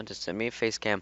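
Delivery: ordinary delivery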